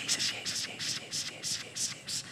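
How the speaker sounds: soft calling out. Retelling being alone and beginning to call out, softly calling out. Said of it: "Zo zachtjes".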